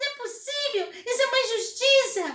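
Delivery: very high, very loud, indignant squeaky mouse voice. Retelling playing a mouse who feels treated unfairly: indignant little mouse voice. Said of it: "a ratinha com essa voz".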